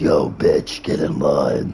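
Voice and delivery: very deep, low, slow, drawn-out demon voice. A speaker shows how to talk to girls, using the devil's voice. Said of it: "Use the devil's voice on them and be like".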